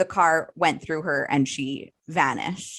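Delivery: ordinary talk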